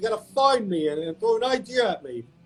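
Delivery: put-on neurotic New York voice. Retelling how a boss once showed some empathy: Larry David impression. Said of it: "It's my Larry David impression".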